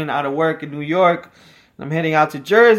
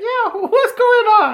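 very high, slow, drawn-out cartoon dog voice; 3 dB louder than usual. Showing how a cartoon dog would talk: imitating a cartoon dog. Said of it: "Even the dog would be like".

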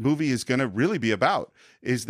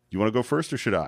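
imitated passive-aggressive tone, lower; 3 semitones lower than usual. Retelling a movie scene at a dam: imitating a passive-aggressive line. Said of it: "Passive-aggressive moment".

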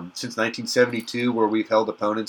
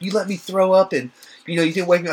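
mock angry, mad complaining, pitched up; 8 semitones higher, 4 dB louder than usual. Retelling what she said the next day, retelling someone being mad. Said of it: "She was so mad at me the next day".

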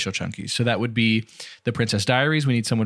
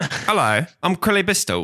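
put-on British shopkeeper accent, high-pitched, swooping; 7 semitones higher than usual. Riffing with others on a silly name, introducing the name in a british grocer voice. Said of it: "sounds like a British grocer".

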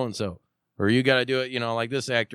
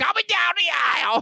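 very high, creaky, raspy announcer voice. Announcing someone coming down the aisle: Gilbert Gottfried impression. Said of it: "That's the best Gilbert I could do".

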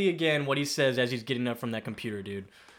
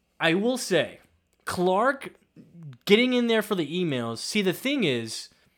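ordinary delivery

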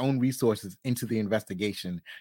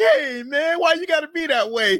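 very high, loud, put-on drunk voice; 6 dB louder than usual. Retelling how a cop approached a suspect, imitating fake drunk speech. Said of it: "he's pretending to be drunk".

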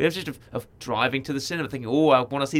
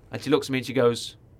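ordinary talk

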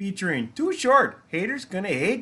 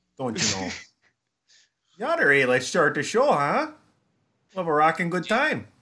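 heavily laid-on put-on Minnesota accent; 3 semitones lower than usual. After being told they sound like someone in Fargo, speaker does a Fargo Minnesota accent. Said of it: "I'm in a Cohen Brothers movie now".

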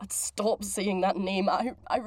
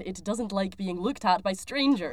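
usual speaking voice

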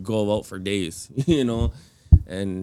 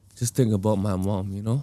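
choked up, on the verge of crying. Speaker talking about their mom, who always encouraged them, on the verge of tears. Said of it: "I feel like I'm going to cry right now".

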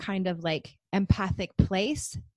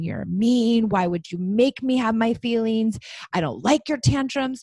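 put-on furious child voice yelling, pitch climbing; 4 dB louder than usual. Retelling what a furious child yelled at her parent: imitating a child yelling angrily. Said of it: "throwing things and yelling at me and saying".

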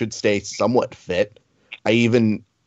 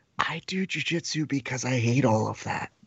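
whispered, much quieter than normal; 3 semitones higher, 9 dB quieter than usual. Speaker retelling what he whispered to him off the air, whispered. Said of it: "I like whispered to him off the air".

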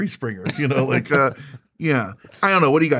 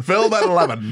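put-on old Mid-Atlantic newsreel announcer voice, higher; 4 semitones higher than usual. Joking about time travel, announcing a headline: old newsreel announcer voice. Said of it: "Mid-Atlantic accent all over Europe".

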